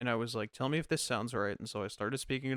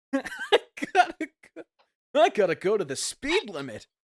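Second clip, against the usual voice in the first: very high, loud, belted nasal voice, full of energy; 11 semitones higher, 9 dB louder than usual. Trying out voices with friends, doing a nasal, energetic Sonic voice. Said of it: "Really energetic and plug your nose".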